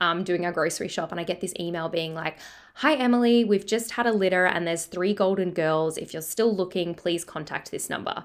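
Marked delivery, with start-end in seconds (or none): none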